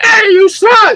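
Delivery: put-on high, slow crazy old lady screech. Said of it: "crazy old lady screaming out".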